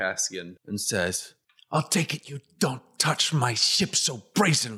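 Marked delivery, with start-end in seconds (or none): 1.7-4.8 curt, sharp, irritated, angry snap. Voicing a ship owner who catches a player touching his ship: snapping angrily. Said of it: "He suddenly snaps at you".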